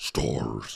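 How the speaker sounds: breathy, whispered creature voice. Explaining the stars line: Nemesis voice. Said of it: "I was trying to do Nemesis".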